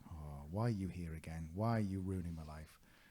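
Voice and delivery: plain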